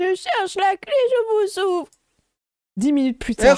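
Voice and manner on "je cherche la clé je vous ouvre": put-on very high, slow, small old-lady voice. Behind the door, answering Apollin who asks her to open: Mamie Meringue old-lady voice. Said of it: "vous entendez une petite voix de vieille dame".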